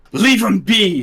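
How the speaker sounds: yelled out, high-pitched and loud.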